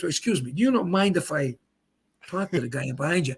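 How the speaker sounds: mock, very polite, courteous voice. Acting out a bowling ball asking a pin: voicing a very polite bowling ball. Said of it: "very polite".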